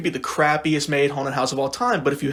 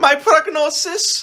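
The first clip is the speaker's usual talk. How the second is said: put-on German accent; 13 semitones higher, 5 dB louder than usual. Retelling a haunted house role as a doctor: imitating own German doctor voice. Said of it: "What if I'm a German doctor?".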